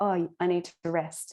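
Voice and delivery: ordinary talk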